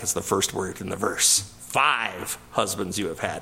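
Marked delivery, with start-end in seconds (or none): 1.7-3.4 cutting, harsh, mean-spirited tone. Quoting a bible verse with added meanness: mock-mean, harsh tone. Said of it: "he didn't say it with the meanness that I just said it there".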